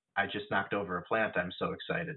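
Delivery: dry, flat, monotone deadpan delivery. Retelling a commercial where Tim Duncan answers a phone: imitating a deadpan delivery. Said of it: "he deadpans into the phone".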